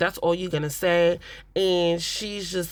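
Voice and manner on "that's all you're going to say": ordinary delivery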